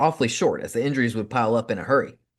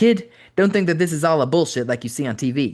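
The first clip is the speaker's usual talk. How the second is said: put-on thick, heavily laid-on Italian accent; 4 semitones higher than usual. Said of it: "He spoke on T V with a heavy Italian accent".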